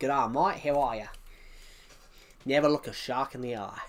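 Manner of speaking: put-on Australian accent, shown off. Showing off being really good at accents, australian accent. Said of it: "I'm really good at Australian".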